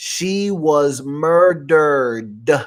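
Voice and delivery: slow, deliberate, word by word delivery. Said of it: "I'm saying it slow".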